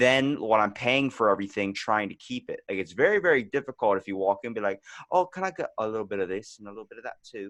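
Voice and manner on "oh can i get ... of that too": put-on, fake British accent. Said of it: "a British accent".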